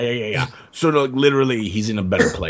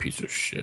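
mumbled, muttered under the breath, quieter. Speaking at a funeral in character, mumbled under breath. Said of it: "I mumble under my breath".

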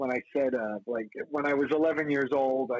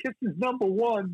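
put-on high kid voice with a thick Brooklyn accent; 8 semitones higher than usual. Act out your past self at 11 on camera, an 11-year-old kid with a thick Brooklyn accent. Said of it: "with the thick Brooklyn accent going".

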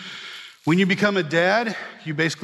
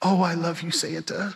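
mock, imitated whisper; 3 dB quieter than usual. Retelling what a girl he picked up whispered in his ear, retelling a whisper. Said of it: "she whispered".

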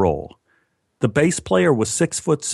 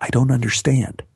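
hushed whisper. During a card game, the narrator answers Sally, whispered back. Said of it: "I whispered back".

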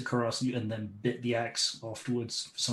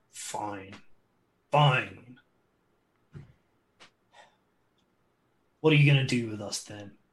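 low growl through gritted teeth. Voicing a bandit who gives up after grudging surrender: growling low, gritted teeth. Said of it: "kind of growls low".

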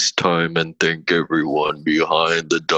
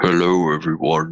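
distorted, scrambled, deep, garbled low hacker voice. Asked to do a hacker voice for a message: deep garbled hacker voice. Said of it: "They're those hackers that do like the deep garbled voice".

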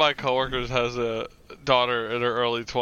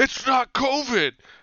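cross, mad, very high-pitched exclamation; 13 semitones higher, 3 dB louder than usual. Retelling an argument about somebody's illness, the speaker quotes her: imitating someone getting mad. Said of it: "she got mad at me one day".

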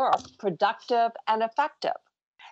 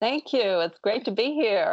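audible smile in the voice. Welcomed by the host, the guest replies with a smiling voice. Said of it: "I can hear the smile in your voice".

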